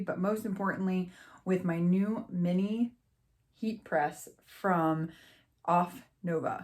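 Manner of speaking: very slow, deliberate, halting, broken mid-phrase. Host introducing a crafting video and the new heat press, said really slowly. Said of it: "I said that really slow".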